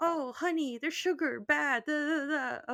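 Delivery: high-pitched mock scolding voice.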